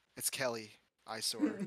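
confiding, voiced stage whisper. Retelling a friend's reveal, acting it out: imitating a whisper. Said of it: "He whispers under his breath".

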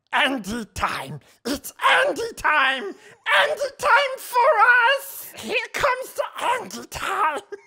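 very loud, very high, sing-song, swooping raspy creature voice. Acting out someone prancing around, doing a Gollum voice. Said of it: "while doing the Gollum voice".

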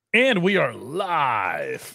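very drawn-out, slow, swooping talk-radio announcer delivery. Podcaster opening the live show, talk radio guy voice. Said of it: "you sound like a talk radio guy".

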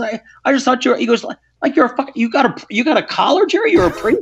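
put-on heavy Irish accent. Retelling what a man asked on learning the speaker is a priest: thick Irish brogue. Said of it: "he's got this thick Irish brogue".

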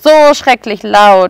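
ordinary delivery

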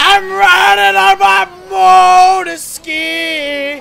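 panicked shouting. A player fleeing an ambush in a game shouts as he escapes: panicked shouting.

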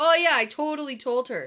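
all-out, heavy sarcasm, fake agreeing tone. Recounting a conversation, speaker quotes a man's reply: retelling a sarcastic reply. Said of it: "Matt gets all sarcastic".

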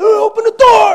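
very loud, very high, shrill screaming holler. Retelling a trapped robber's panic in a sermon story: imitating a robber screaming. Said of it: "And he's screaming, he's hollering".

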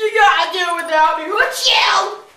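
exaggerated sick shout, loud, high mock wail.

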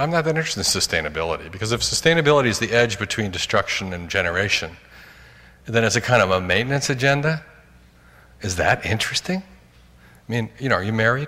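ordinary delivery

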